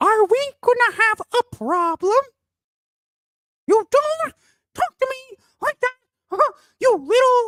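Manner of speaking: very high, squeaky cartoon mouse voice. After the other speaker names the squeaky voice as a favorite, squeaky South Park voice. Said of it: "Mouse from South Park".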